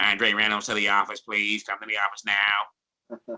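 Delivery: slow, nasal, small announcer pitch. Show how you imitated an administrator's morning announcements in high school, as a nasally Danny Franklin impression. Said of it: "He had this little nasally pitch to his voice".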